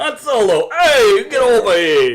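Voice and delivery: put-on New York Italian accent. Imagining Jabba the Hutt calling for Han Solo, Jabba as Andrew Dice Clay. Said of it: "sounded like Jabba as voiced by".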